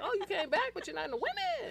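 very high, swooping, sing-song put-on voice. Speaker acting out how they talk to him, in a high put-on voice. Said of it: "That's how I talk to him".

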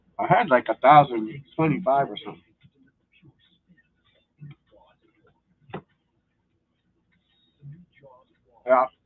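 speaking with food in mouth, chewing. Talking mid-conversation while still chewing food. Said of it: "Sorry, I'm still fucking chewing".

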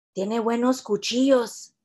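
soft, conspiratorial half-whisper. A woman beside the narrator watches a kid set up knives, half-whispered. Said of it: "she whispered".

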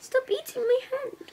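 put-on high, soft baby talk.

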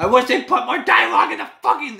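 really agitated, pissed-off venting. Signing off to viewers after complaining about an anime, really agitated and pissed off. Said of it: "I'm getting really fucking agitated".

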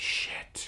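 quiet under-breath mutter. Recounting watching a movie, repeating what was muttered under breath. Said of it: "under my breath".

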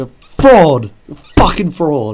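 loud, angry, furious, cursing outburst. Confronting a character who claimed to know everything: angry shouting. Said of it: "I just got really angry".

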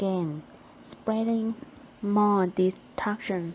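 ordinary delivery, nothing marked

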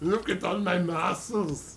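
put-on German accent, boastful strongman tone. Roleplaying a low-charisma, high-strength game character, Arnold Schwarzenegger-style German accent. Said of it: "knock it off with a German accent".

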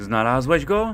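worried calling. A mother opening the back door calls out anxiously. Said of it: "Zawołała z niepokojem matka".

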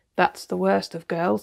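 ordinary delivery, nothing marked

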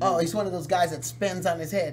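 normal talking voice

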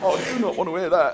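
high, anxious, panicked astronaut radio voice.

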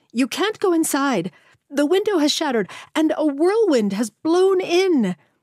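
very high-pitched, loud yelling. A woman grabbing two people to keep them out of an office, yelling.

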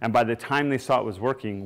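ordinary delivery

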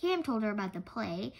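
plain reading voice

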